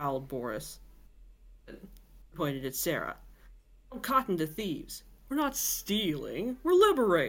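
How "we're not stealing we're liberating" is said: smug, self-satisfied, swooping sing-song. Boris replies to being called a thief, smug. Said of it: "Boris smugly".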